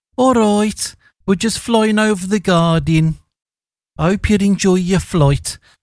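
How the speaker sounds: terrible put-on Birmingham accent. Imagining a Brummie airline pilot making an announcement, in a bad Birmingham accent. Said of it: "A terrible Birmingham accent from me".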